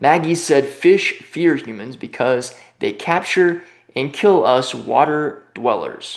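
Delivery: plain reading voice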